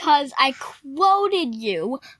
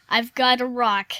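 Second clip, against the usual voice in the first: ordinary talk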